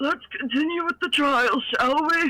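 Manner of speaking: put-on creaky, elderly old man voice. Voicing the judge character who resumes the trial: old man voice. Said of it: "That's such a good old man".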